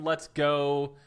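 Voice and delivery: ordinary delivery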